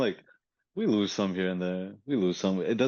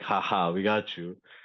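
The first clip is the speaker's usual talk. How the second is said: put-on gloating voice. Retelling how Turab laughs about beating him: imitating Turab laughing at him. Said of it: "Turab's gonna laugh about it".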